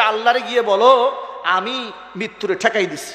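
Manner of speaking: usual speaking voice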